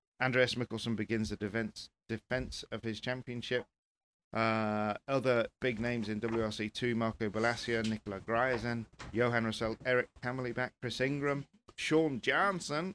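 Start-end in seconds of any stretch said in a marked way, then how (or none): 11.8-12.9 put-on American accent, pitched up. Reading out a list of driver names: American accent. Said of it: "the American accent".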